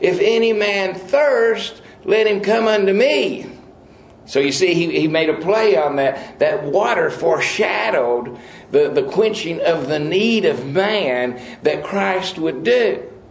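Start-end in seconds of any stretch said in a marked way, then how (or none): 0.0-3.5 loud, high-pitched cry. Retelling how the man cried out during the solemn water-pouring, retelling a loud scream. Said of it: "this man screams with a very loud voice".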